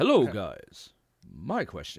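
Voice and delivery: silly, low, swooping put-on announcer voice. Reading a fan's letter for the Ask [name] segment, trying a put-on Ask [name] voice. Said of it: "I should make an Ask [name] voice".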